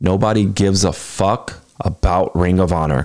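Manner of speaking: very slow, deliberate, word by word. Speaker telling the owner of ring of honor something, said slowly. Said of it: "I'm going to say this slow".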